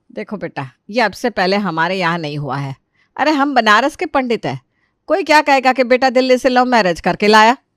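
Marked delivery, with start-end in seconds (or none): none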